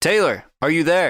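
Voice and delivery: hard, high shouting. Playing a game, the speaker's character shakes a rock, shouting into the rock. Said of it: "I shout into it".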